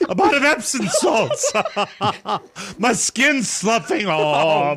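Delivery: squeaky voice, off stretched out. Riffing a bit with Mike about a drugstore, in the Uncle Cartoon voice. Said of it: "the Uncle Cartoon voice says".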